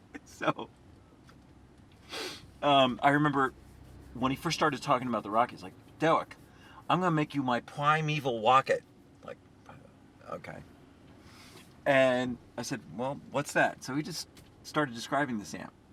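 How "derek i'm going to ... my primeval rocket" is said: put-on New York accent with a lisp. Retelling what a man said to Derek: imitating New York accent with lisp. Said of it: "He had a New York accent and he had a lisp".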